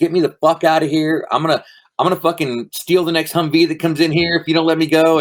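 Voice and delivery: put-on frantic high yell. Retelling demands to doctors to be let out of hospital: imitating own past yelling. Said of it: "I'm yelling at doctors".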